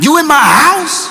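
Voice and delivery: very high, menacing, aggressive, ready to brawl. Retelling a phone call where someone finds an intruder at home: imitating a bass-heavy threatening voice. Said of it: "Bass in voice".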